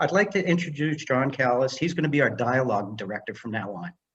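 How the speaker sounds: ordinary talk, nothing marked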